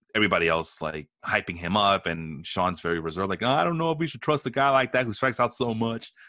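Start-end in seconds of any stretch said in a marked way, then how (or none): 3.4-6.1 put-on Southern Alabama accent, pitched up. Mimicking Sean's doubts about a hyped player, imitating Sean in Alabama accent. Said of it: "That's my Alabama accent".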